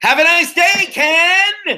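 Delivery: very high yell with one word dragged out. Retelling passing a man on the street who looked away, retelling a scream. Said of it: "I screamed out".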